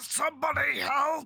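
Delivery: fearful yelling. Asked on Discord for an approximation of their yelling, giving a fearful yell. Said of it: "Can you give us an approximation of your yelling?".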